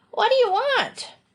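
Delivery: very high, crackling call, sounding far away. A woman answers a man's call from the dim hallway, Adelia's high crackling voice. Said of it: "A high, crackling voice from the dim regions of the hallway answered".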